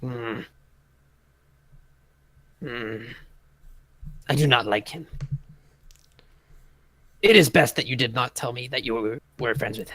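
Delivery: gruff grunting. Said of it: "kinda grunts".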